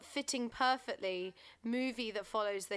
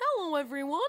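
loud frog puppet voice; 4 semitones higher, 5 dB louder than usual. Sitting on the bus in a big mask, the speaker greets everyone, Kermit impression. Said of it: "I just went".

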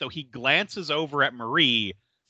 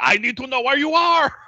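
put-on shrill, aggressive, demanding, very high shout; 11 semitones higher, 5 dB louder than usual. Retelling a dispatcher with a caller who can't say where she is; imitating him yelling. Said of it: "he's just yelling at her".

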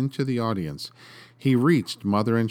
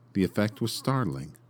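ordinary delivery

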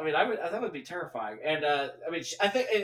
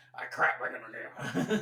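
lower put-on old cowboy voice; 3 semitones lower than usual. Quoting the actor's role Curly from City Slickers: Jack Palance impression. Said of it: "I used to do impressions of him".

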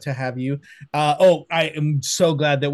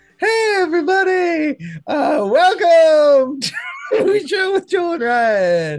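very high, loud, animated, swooping host voice; 5 dB louder than usual. Retelling how Ryan imitated him opening the show: imitating Ryan imitating Joel. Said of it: "Ryan's impression of me starting the show".

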